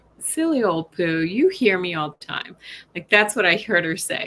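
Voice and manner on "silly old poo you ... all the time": put-on scolding voice while laughing. Imagining how a woman would have talked to the listener, imitating a laughing scold. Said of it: "chastising you, sort of laughing like".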